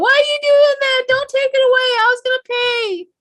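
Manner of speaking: very high-pitched hollering. Retelling a man's protest as repo men tow his property away, imitating someone hollering. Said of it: "he's like hollering behind it".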